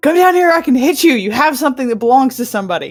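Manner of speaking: loud shout hollered upward, pitched high. Playing a character who shouts up at a flying harpy: shouting up at the harpy. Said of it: "I'm gonna shout up at the harpy".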